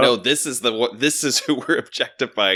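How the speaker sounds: ordinary delivery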